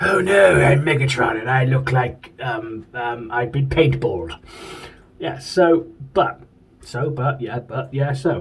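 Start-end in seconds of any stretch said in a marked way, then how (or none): 0.0-4.4 put-on posh accent, laid on. Describing his G2 Megatron figure, speaker voices him: posh-accented Megatron voice. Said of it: "I don't know why he's got a posh accent".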